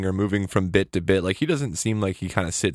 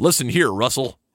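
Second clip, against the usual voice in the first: overdone, laid-on, exaggerated American accent; 4 semitones higher, 4 dB louder than usual. Telling the dog russell off at the window, in an american accent impression. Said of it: "You gotta use your best American accent".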